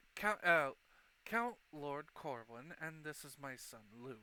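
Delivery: halting, stumbling stammer full of false starts. Voicing a noble greeting a visitor and trailing off: stuttering, trailing off. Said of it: "he just kinda stutters off a bit".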